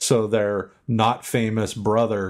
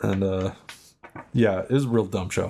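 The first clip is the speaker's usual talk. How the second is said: usual speaking voice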